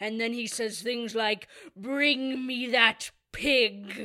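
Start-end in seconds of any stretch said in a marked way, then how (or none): 1.8-4.1 imposing, very slow, raised booming voice. Quoting the villain's line from the film: imposing Horn King voice. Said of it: "he sounds so imposing as the Horn King".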